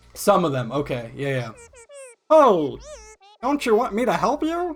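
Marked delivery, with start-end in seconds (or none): 2.3-4.8 goofy, silly put-on voice, much higher. Playing a game, voicing a female character, goofy voice. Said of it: "giving her like a fucking goofy voice".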